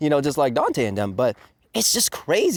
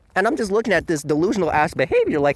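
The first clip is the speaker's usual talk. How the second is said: ordinary talk, nothing marked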